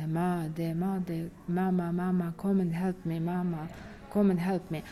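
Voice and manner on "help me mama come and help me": normal talking voice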